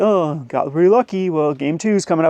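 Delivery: acted, put-out, huffy, exasperated tone. Retelling what a losing opponent said: imitating a huffy opponent. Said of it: "kinda huffing".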